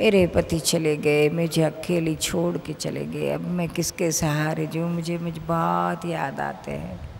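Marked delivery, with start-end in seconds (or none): none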